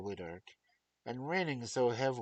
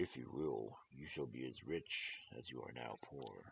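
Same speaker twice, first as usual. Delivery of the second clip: very low, very quiet baritone bear voice; 9 semitones lower, 10 dB quieter than usual.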